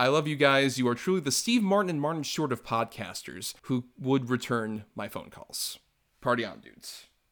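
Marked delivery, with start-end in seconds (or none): none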